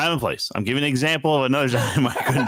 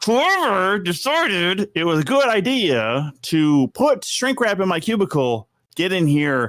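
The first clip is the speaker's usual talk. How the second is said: seething anger through gritted teeth, pitched up; 7 semitones higher than usual. Retelling going out to the warehouse not very calm, retelling speech through gritted teeth. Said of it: "I was like just gritting my teeth".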